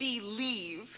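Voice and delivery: believe hit hard with heavy stress, enunciated. Imitating how she emphasizes the word believe when telling a story, emphasized word believe. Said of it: "she emphasizes the word believe, like".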